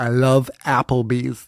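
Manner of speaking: attempted American accent. Practicing the most american sentence they could think of, attempting an american accent. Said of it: "really emphasize the A".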